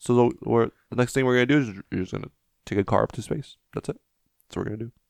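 soft, casual, offhand founder voice. Describing how an inventor talks, in an Elon Musk impression. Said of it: "He talks like that".

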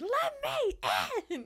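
put-on, shrill, very high, furious voice. Recapping a story where a character beats down a door: imitating an angry demand. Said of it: "Not just like angrily confronts him, but like beats down the door".

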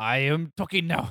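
put-on cartoon monkey villain voice. Acting out a talking zoo monkey, speaking like Mojo Jojo. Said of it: "Monkey starts to talk like Mojo Jojo".

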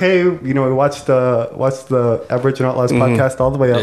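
plain

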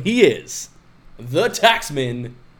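wrestling ring announcer voice.

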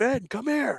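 play-acted, very high, angry-sounding yell. Retelling being called over as if in trouble: imitating dad yelling. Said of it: "He yelled at me like I was in trouble".

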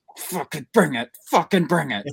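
put-on angry coach voice, pitched high. Two speakers recalling their coach, imitating angry Coach Parker. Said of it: "when Coach Parker's pissed".

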